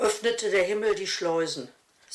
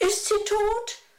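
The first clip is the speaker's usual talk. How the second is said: very high, quavering, trembling voice; 13 semitones higher than usual. A narrator reads a character's question during a storm, in a trembling voice. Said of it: "fragte er mit zittriger Stimme".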